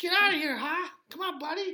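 put-on thick Massachusetts accent, very high-pitched. Retelling how a guy talked trash to another guy, in a heavy Massachusetts accent. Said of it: "it was with the heaviest Massachusetts accent".

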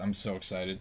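deadpan, level, flat monotone delivery. Claiming to be so excited about it, but in a flat monotone. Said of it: "As I say it again in a monotone voice".

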